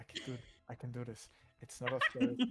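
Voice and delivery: whispered encouraging tone. Voicing a nervous character in a cave, whispering affirmations to himself. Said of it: "whispering to himself, like, uh, affirmations".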